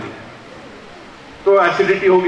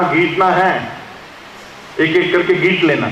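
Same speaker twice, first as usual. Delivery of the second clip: usual speaking voice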